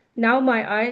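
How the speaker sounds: plain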